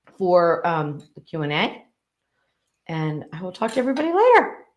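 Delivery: talking with mouth full. Thanking viewers for tuning in while eating: talking with food in mouth. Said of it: "I've got food in my mouth".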